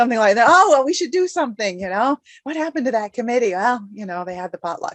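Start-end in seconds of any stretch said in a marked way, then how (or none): 0.5-3.5 put-on pure sarcasm with fake concern, pitched up. Acting out people remembering the forgotten committee: sarcastic imitation. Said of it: "that was complete sarcasm there".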